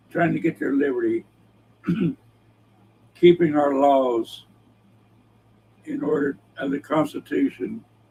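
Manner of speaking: choked-up voice, catching and breaking with emotion. Speaker gets emotional partway through his remarks, choked up a little. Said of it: "I'm getting choked up a little bit".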